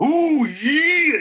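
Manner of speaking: very high, cranked-up delivery full of attitude. Contrasting a plain hello with the Macho Man voice: Macho Man voice. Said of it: "But the Macho Man is not an accent".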